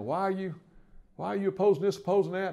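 play-acted loud, high-pitched hollering. Retelling the governor's phone call after a press conference: imitating Zell hollering. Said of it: "it would be Zell hollering at me".

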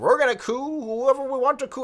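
very high, absurd, jokey sketch-comedy voice. Retelling what he said on camera, in a Monty Python voice. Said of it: "he said it like in like a Monty Python voice".

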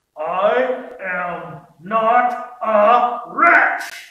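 very loud, insistent, spoken through clenched teeth. Quoting the one answer people always give, imitating clenched-teeth speech. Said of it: "I'll try and clench my teeth".

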